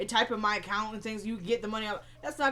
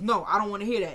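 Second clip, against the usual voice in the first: ordinary talk, nothing marked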